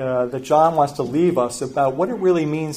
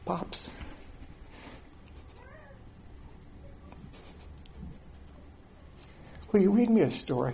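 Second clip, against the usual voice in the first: put-on drowsy child's soft, breathy, sleepy whisper; 7 semitones higher, 14 dB quieter than usual. Speaker retells Joel coming to him at day's end, imitating Joel's soft, sleepy voice. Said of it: "in this kind of soft, sleepy voice".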